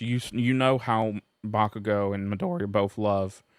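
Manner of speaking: cracking voice. Telling viewers about the show's characters as the voice cracks: voice cracking. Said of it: "voice crack again. I'm going through puberty".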